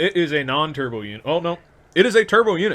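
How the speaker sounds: excited voice.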